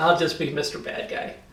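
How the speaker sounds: plain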